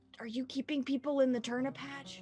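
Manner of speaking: hushed, whispered voice. Speaker whispers a question to the bag: whispering. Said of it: "I'm whispering to the bag".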